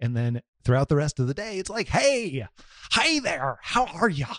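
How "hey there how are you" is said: high, unhurried, drawn-out voice. Podcast host demonstrating how the voice rises later in the day, higher-pitched voice. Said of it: "the higher pitched my voice goes".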